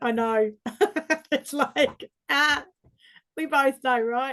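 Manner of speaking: words spilling out while laughing. Talking with a partner about an inner criticizer, laughing while talking. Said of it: "Sorry, I'm laughing".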